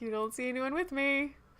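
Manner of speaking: sarcastic comeback. In a role-play, answering someone who assumes they came alone, sarcastic. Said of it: "going to sarcastically put my hands up like".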